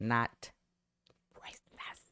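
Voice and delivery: hushed, breathy, barely audible whispered aside. Reading out a video's title and its claims: whispering. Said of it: "I had to whisper that".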